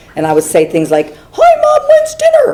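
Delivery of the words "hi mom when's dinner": very high, squeaky, pitched-up cartoon voice. Retelling coming downstairs to talk to Mom, in a high squeaky Minnie Mouse voice. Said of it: "in this really high-pitched, like, squeaky voice".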